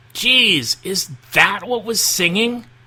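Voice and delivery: very high, jolted, startled yelp of alarm. Narrator reading a story as three ponies hear a roar: Dash yelping.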